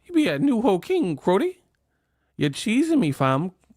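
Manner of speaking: put-on Toronto accent. Mocking how people from Toronto talk: imitating a Toronto accent. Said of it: "That Toronto accent is crazy".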